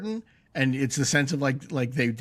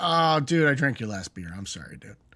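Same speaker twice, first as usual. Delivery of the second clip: put-on casual, offhand tone. Retelling how a show character apologized: imitating Mike's low-key apology. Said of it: "he's almost like".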